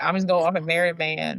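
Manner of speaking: usual speaking voice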